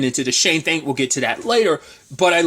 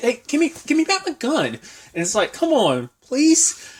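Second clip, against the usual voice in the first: put-on childlike voice, higher pitched; 9 semitones higher than usual. Retelling a scene where a robber begs for his gun back: imitating a little kid. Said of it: "he's almost like a little kid".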